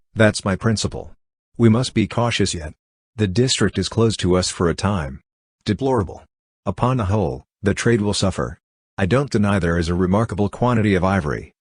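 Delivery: ordinary delivery, nothing marked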